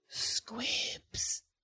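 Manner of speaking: barely voiced, hushed whisper. Recapping a story, the speaker voices a character whispering: retelling a whisper. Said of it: "And she whispers".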